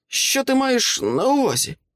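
very high-pitched, unconvincing, feigned surprise. A taped-up captive answers his captor's question: unconvincingly surprised. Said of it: "запитав він здивовано".

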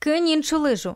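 called out loudly at a high pitch. Rik, in the water, calls out to Sabrina, shouted. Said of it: "крикнув він Сабріні".

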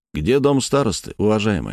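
ordinary delivery

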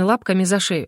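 plain reading voice

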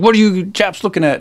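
put-on high-pitched Yorkshire accent. Retelling what an older boy from Yorkshire said to a group of kids, Yorkshire accent. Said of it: "in the Yorkshire accent that he did".

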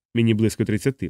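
ordinary delivery

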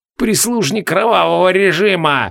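hissed, each word pushed out. A narrator reads the sorcerer's outburst, hissed. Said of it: "прошипел Ках".

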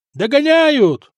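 high-pitched yelling, like a sailor. A sailor, as the pursuing ship closes in: shouting. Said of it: "крикнул матрос".

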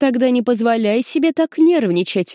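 peremptory, categorical tone brooking no objection. A woman replies to the pleading narrator, peremptorily. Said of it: "безапелляционно заявляет она".

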